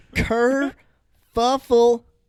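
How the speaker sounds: kerfuffle said again, slow and drawn out. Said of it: "say it again".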